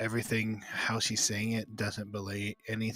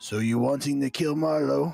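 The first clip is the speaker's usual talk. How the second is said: very loud, rough-edged female orc voice; 5 semitones higher, 9 dB louder than usual. Voicing a female orc who questions a caged prisoner: female orc voice. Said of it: "familiar voice of a female orc that says".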